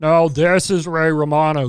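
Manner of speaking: exaggerated croaky, froggy put-on voice. Doing a Ray Romano impression, voice already froggy enough. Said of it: "I can do the impression pretty well".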